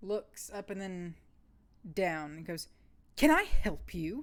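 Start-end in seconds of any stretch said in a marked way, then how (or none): 3.2-4.2 severe, stern man's voice, raised. Game narrator voicing a very stern man who opens the door, stern voice. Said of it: "a very stern man opens the door".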